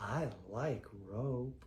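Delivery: low, slow, dead serious creepy voice.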